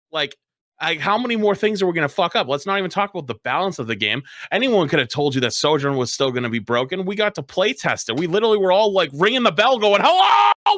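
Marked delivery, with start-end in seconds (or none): 10.0-10.7 very high, loud, shrieking scream. Recalling playtesters ringing the alarm about the game, the speaker retells a scream. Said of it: "we're all screaming".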